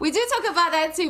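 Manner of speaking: high, loud laughing.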